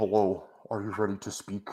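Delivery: soft, put-on, voice-modulator-like voice. Showing how they would sound through a voice modulator, in a voice-modulator voice. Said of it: "I need a voice modulator, so it's like".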